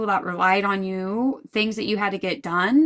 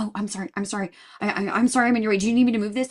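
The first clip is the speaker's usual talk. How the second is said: acted, flustered, panicked, stammering delivery. Retelling how a grocery store stocker apologizes: imitating a panicked stocker. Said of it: "like, panicked".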